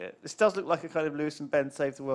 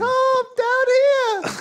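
tiny elf voice, much higher and louder; 13 dB louder than usual. While recording, a voice effect makes the speaker sound like a tiny elf. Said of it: "He can make me sound like an elf as well".

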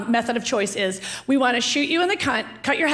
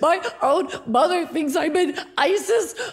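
put-on crying, higher pitch; 5 semitones higher than usual. Retelling a phone call to Rosie, the speaker acts out crying. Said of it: "I'm crying and I go".

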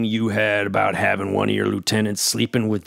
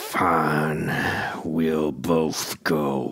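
low, very slow, forced through gritted teeth; 6 semitones lower, 4 dB quieter than usual. A character replies to another character, speaking through clenched teeth. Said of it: "(through clenched teeth)".

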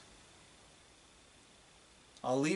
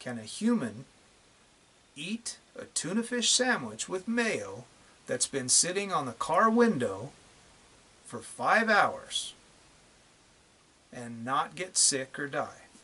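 drawn-out, very slow, with long pauses. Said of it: "I'll say it one more time, very slowly".

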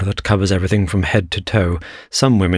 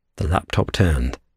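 plain reading voice

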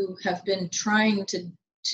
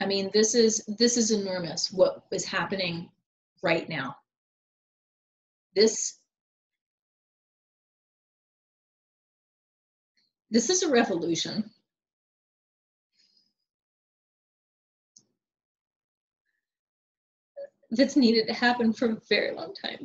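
tearful speech, crying through the words. Urging listeners to grasp how big this moment in history is, crying while speaking. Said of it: "I don't know why I'm crying".

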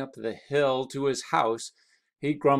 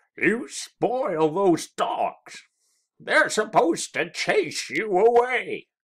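grumbling, higher pitched; 8 semitones higher, 4 dB louder than usual. A man complains to a visitor whom his dogs ran to greet, grumbling. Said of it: "grumbled Ezra".

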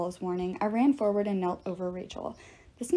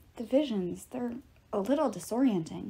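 ordinary delivery

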